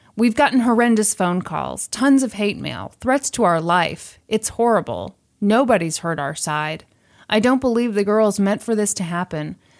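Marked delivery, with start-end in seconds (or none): none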